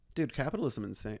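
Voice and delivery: plain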